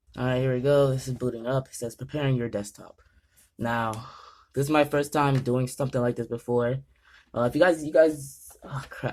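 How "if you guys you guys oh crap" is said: nervous stammering false start, tripping over words. Booting up a PC for the first time, talking to viewers: nervous stuttering. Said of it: "I'm stuttering, bro. I'm just so nervous right now".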